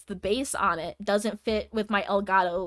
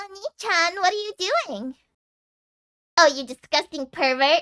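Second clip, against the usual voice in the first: put-on high, bratty, mesugaki-style anime girl voice; 9 semitones higher than usual. Showing off the voices the speaker can do: bratty little anime girl voice. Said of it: "I can only do Mesugaki".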